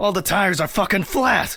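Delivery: furious, shrill, very high enraged yell. Telling Ridley about the flat tires: angry outburst. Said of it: "calm down".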